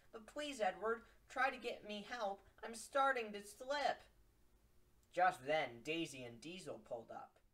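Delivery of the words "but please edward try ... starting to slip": higher-pitched begging. Narrator reads Thomas's line to Edward after his accident on the track, pleading. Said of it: "Thomas begs while slipping off viaduct".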